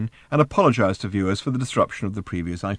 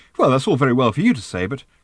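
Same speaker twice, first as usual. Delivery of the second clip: ordinary delivery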